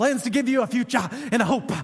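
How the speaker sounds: put-on southern preacher voice, Bible-belt pulpit delivery. Quoting Jeremiah 29:11, in a put-on southern preacher voice. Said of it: "I feel like I need a southern preacher like in my voice".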